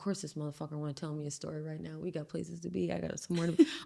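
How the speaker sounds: mock muttering. Describing hearing themselves when someone starts a story, imitating muttering under breath. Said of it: "under my breath".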